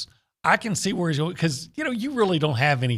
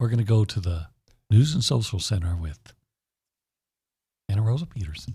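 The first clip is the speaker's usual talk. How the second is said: very low radio DJ voice; 7 semitones lower than usual. Asked to toss to the news, a host hands off in 102 Jams Quiet Storm voice. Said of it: "in your most one oh two Jams Quiet Storm voice".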